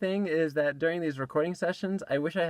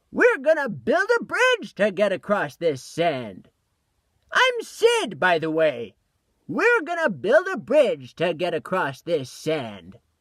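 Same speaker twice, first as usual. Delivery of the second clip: put-on loud, swooping little old man voice; 2 semitones higher, 5 dB louder than usual. Voice actor recording takes as Sid, in a little old man voice. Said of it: "like a little old man voice".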